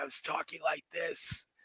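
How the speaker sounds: slow, worn-out, sick, smoker-like voice. Showing how own voice sounded after being ill: imitating own sick, smoker-like voice.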